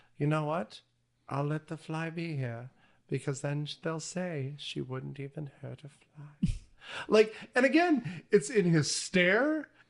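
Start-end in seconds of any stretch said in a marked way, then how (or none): 0.2-6.5 put-on soft, creepy, terrifying old-woman voice. Describing a favorite scene, quoting the character in a terrifying old woman voice. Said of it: "this terrifying old woman voice".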